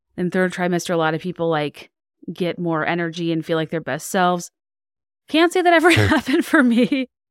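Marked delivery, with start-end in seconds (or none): 5.2-7.0 high voice broken by short barking laughs. Talking about the third trimester, bark laughing through the words. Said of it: "I keep bark laughing".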